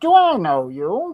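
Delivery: put-on textured, loud, high-pitched old-timey character voice. Trying out character voices, in an old-timey textured voice. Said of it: "the old timey texture voice".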